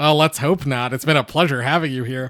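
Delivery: mocking, sarcastic delivery. Trying out a script line for the first time: sarcastic line reading. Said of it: "is he supposed to be sarcastic? Like".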